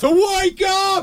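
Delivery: high, slow mock shout like an alarm clock.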